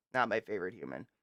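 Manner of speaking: plain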